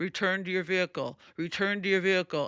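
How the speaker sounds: robotic, machine-like voice. Stuck in tunnel traffic, repeating what a device announced, in a robotic voice. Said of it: "this robotic".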